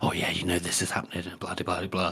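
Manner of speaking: hushed, quiet whisper. Discussing a book, retelling how Hoff speaks to another character: Hoff's hushed whisper. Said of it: "talking to him in these hushed whispers".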